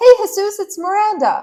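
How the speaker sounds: put-on very high, loud, chipper, eager-to-please voice. Retelling calling someone on the phone: imitating own chipper greeting. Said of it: "I am chipper".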